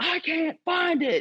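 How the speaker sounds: very high, slow, drawn-out frantic rage. Retelling tearing through a backpack at a competition, retelling frantic raging. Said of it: "I'm like raging through my backpack".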